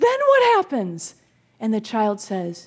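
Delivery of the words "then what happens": play-acted, barely contained eagerness, very high pitch. Retelling a joke, quoting the pastor's eager question: imitating an excited pastor. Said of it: "the pastor is so excited she can hardly contain herself".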